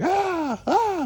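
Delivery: very high, breathy, half-asleep panicked yell.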